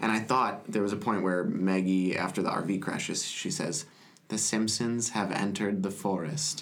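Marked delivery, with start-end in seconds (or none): 4.3-6.6 flat, expressionless delivery. Quoting a line from a Simpsons episode after the RV crash; deadpan Maggie line. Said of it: "Just so deadpan".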